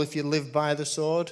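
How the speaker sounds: normal talking voice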